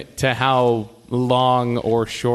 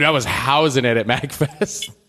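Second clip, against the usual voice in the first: ordinary talk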